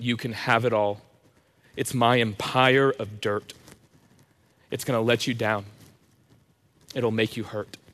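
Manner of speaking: plain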